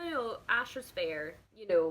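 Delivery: ordinary delivery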